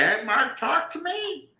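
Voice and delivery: very high-pitched voice. Complaining that family won't leave them alone, imitating mom's voice. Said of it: "That's the mom voice".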